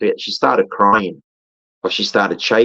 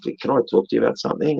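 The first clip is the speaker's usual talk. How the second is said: hushed, soft, quiet, confiding just-between-us tone; 5 dB quieter than usual. Retelling a cousin quietly asking to share something: imitating someone speaking softly. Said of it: "she sort of said it softly".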